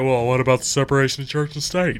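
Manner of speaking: mad, challenging, indignant, angry tone. Quoting critics who object to the school issue: imitating people getting mad. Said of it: "Then they all get mad and say".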